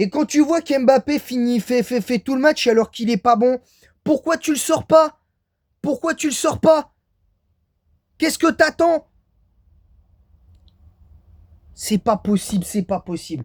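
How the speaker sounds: furious, exasperated venting. Speaking to viewers about the team's coach, an angry rant. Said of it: "Je suis énervé".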